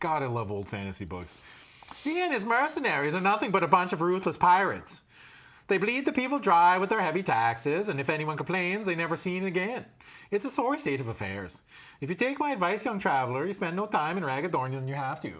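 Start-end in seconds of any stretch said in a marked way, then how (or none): 2.0-15.3 put-on higher Irish-sounding accent. Voicing a character from an old fantasy book: Irish-sounding accent. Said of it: "it feels very, like, Irish, but also maybe, like, Norse".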